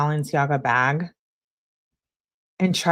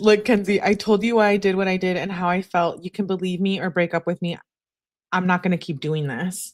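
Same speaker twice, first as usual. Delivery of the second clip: ordinary delivery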